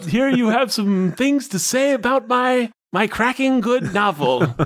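put-on hammy, very high old-sport caricature. In a comic ghost scene, one ghost addresses Fitzgerald in a crappy 'old sport' stereotype voice. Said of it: "I talk like a crappy stereotype of".

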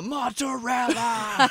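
slow, high, drawn-out battle yell.

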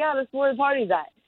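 quick, bright, breezy, happy-go-lucky delivery. Quoting a man's reply, then admitting he didn't say it that way: retelling it happy-go-lucky. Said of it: "he didn't say it so, like, happy-go-lucky".

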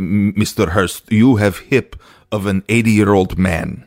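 put-on Russian accent. Retelling what the doctor said on seeing the x-ray: imitating a russian accent. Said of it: "and he's Russian".

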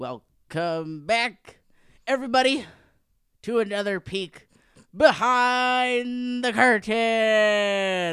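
slow, booming, drawn-out wrestling announcer build-up. Host welcoming everybody back to the show: WWE announcer voice. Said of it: "I feel like a wrestling announcer".

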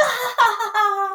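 high-pitched laughter bursting out. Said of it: "And they all bust out laughing".

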